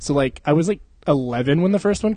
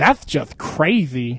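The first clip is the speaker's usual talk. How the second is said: put-on lisping voice. Retelling a movie role, imitating Samuel L. Jackson with a lisp. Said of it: "he's got a fucking lisp".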